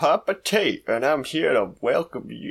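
Cajun accent appearing suddenly, put-on. Host opens the episode introducing himself to listeners: sudden Cajun accent. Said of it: "I don't know why it's Cajun".

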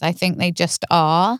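ordinary talk

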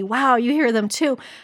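ordinary talk

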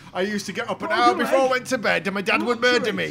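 put-on old northern boaster voice. Recalling a comedy sketch to the others: Monty Python Four Yorkshiremen voice. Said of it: "reminded me of the Monty Python Four Yorkshiremen sketch".

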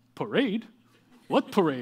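put-on Serbian-accented speech. Acting out a Denver Nuggets player answering a reporter after the championship, imitating a Serbian accent. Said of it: "In his Serbian accent".

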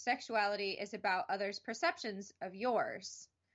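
ordinary talk

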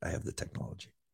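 soft, unvoiced whisper with barely any voice. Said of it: "the night that I can't talk".

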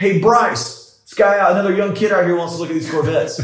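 play-acted shout. Retelling how an older salesman shouted across the showroom: imitating someone shouting. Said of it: "just shouted".

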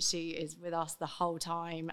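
ordinary talk

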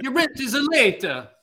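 put-on Italian accent. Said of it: "my Italian Pablo Picasso landlord impression".

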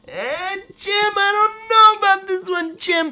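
very high-pitched color commentator announcer voice. Retelling a fourth-down play, imitating the announcer: Tony Romo impression. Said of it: "my Tony Romo impression there".

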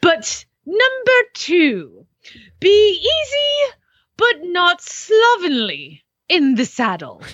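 very slow, easy, drawn-out delivery, swooping up high. Reading old riding advice aloud: Julia Child voice. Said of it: "who's the, Julia Childs?".

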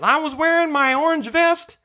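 deaf-man voice, pitched way up. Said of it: "and he was wearing".

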